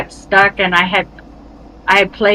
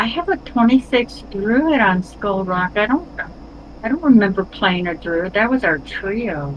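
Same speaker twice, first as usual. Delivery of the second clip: normal talking voice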